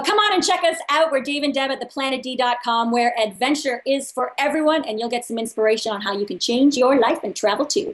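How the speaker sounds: put-on promo-spot announcer voice. Asked where listeners can find them, a guest plugs their site in an announcer voice. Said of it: "I did an announcer voice".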